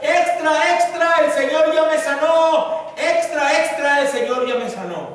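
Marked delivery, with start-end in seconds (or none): 0.0-4.0 high, drawn-out newspaper seller's street-vendor calling shout. Retelling how a healed blind man shouted at a newspaper corner: imitating someone shouting. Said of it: "empezó a gritar".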